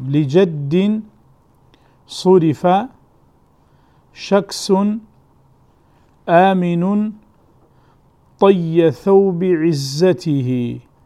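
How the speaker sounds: very slow dictation delivery, every word spaced out.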